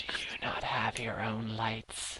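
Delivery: soft, slow, faint eerie whisper. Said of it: "you all hear these whispers".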